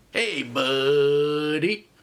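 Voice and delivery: slow, drawn-out put-on surfer dude voice. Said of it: "That was my Pauly Shore impression".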